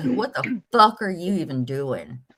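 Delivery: angry, mad outburst. Retelling a confrontation with someone who was live: retelling own angry words. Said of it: "I was mad".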